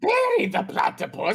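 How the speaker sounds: very high, loud voice pushed from the throat. Comparing cartoon voices with a co-speaker, demonstrating: Doofenshmirtz voice. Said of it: "his voice is more in the back of the throat and higher".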